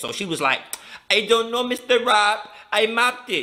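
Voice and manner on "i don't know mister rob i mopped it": put-on English words drawled in a Spanish accent. Retelling an argument between Rob and Maria, imitating Maria's Spanish accent. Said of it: "she got that Spanish accent".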